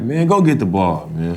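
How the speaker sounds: put-on slow, drawn-out Baltimore accent. Retelling what a teammate used to say: imitating Will Barton's Baltimore accent. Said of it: "The Baltimore accent".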